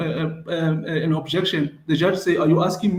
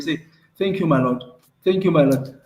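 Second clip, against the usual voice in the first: mock-sarcastic, mock-polite "thank you"; 2 semitones lower than usual. Retelling how a man said thank you, the speaker imitates mock-sarcastic thanks. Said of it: "he said thank you in a sarcastic way".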